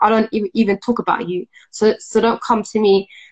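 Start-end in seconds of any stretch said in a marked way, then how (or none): none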